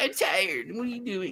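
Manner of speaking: sleepy, weary, worn-out dog voice. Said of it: "She's like".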